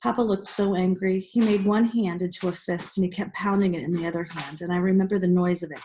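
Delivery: plain reading voice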